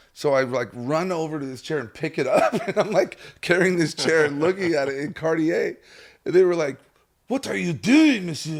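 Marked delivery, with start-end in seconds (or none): 7.3-8.6 bitchy, snooty French woman's voice, pitched up. Speaker retells a woman in Cartier catching them carrying a chair, mock bitchy French woman. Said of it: "this bitchy French woman".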